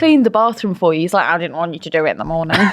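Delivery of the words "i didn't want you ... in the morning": earnest, eager, trying hard to sound normal. Imitating Keir after he cleaned the bathroom at a party: Keir impression. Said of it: "quite a good little impression there".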